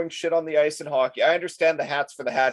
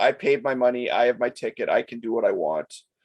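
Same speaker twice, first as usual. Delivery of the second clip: ordinary talk, nothing marked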